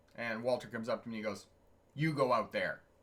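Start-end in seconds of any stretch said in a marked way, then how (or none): 2.0-2.8 put-on stern, grumpy, miserable old-coot voice. Retelling a boss's order to leave the office: imitating a stern miserable old coot. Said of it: "in this very stern, kind of miserable, old coot voice".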